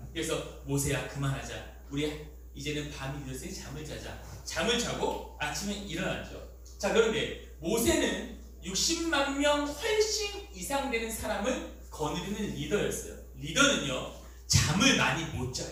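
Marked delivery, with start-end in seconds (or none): 0.6-4.2 low, soft, weary, tired-sounding voice. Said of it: "피곤하시겠죠".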